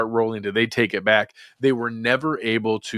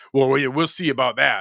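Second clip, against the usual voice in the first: slightly mad, unhinged-sounding delivery; 3 semitones higher than usual. Recounting Dan Campbell's reply when a woman questioned him: mock-mad Dan Campbell quote. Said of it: "It had that kind of tone".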